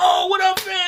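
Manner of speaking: put-on gushing, super-excited, very high voice. Retelling greeting a friend at a party: imitating own super enthusiastic greeting. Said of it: "super enthusiastic".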